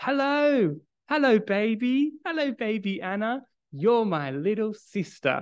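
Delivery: put-on sweet, affectionate little boy voice, slow, high. Retelling a son greeting his newborn sister by video call: imitating Caleb speaking with a big smile. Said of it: "he says with that big smile".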